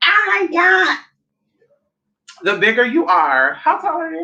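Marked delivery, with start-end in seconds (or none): 0.0-1.0 high, creepy put-on voice. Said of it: "Like Miss Chalet voice".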